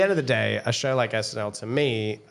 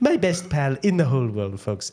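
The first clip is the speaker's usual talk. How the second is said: animated put-on voice, pitch swinging wide; 3 semitones higher, 3 dB louder than usual. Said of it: "Our Trump impression?".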